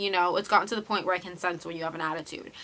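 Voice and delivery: normal talking voice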